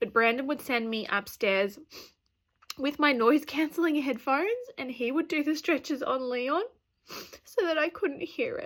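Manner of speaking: tearful voice, close to crying, getting upset. Telling viewers about a hard time after birth, getting upset, crying. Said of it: "I did not expect to get this upset".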